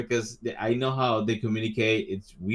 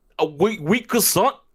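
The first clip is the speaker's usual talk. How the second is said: radio-DJ style voice, much higher pitched; 9 semitones higher, 5 dB louder than usual. Asking whether a croissant sounds French, say it in a DJ-esque tone. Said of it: "putting some sort of D J esque tone".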